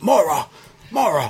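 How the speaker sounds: imitated shout. Imitating a British neighbor calling his dog, retelling a yell. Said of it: "He yells".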